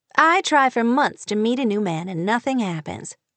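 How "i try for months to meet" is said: plain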